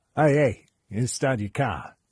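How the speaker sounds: trying out a Boston accent. Trying to work out a Boston accent before a reading: attempted Boston accent. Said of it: "What's a Boston accent?".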